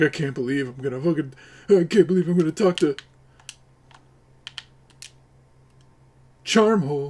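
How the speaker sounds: play-acted, fast, terrified, trembling, nervous babbling. Mocking someone about to talk to Charmhole, imitating him shaking and terrified. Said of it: "He's shaking right now".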